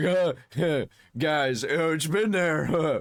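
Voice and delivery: very drawn-out, halting, stumbling over the uhs. Mocking how Thor sounds when he lies: imitating Thor's lying voice. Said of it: "Whenever he uses that voice where he's like".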